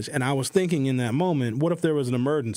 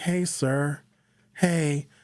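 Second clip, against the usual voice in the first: friendly, courteous, polite tone. Retelling how he greeted an Uber driver, retelling his nice polite tone. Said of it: "I had my nice tone of voice".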